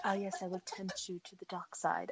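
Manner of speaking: put-on very soft, velvety voice in a British accent. Discussing an actor's accent choice, doing a Tom Ellis British accent impression. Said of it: "So not like Carla's impression then".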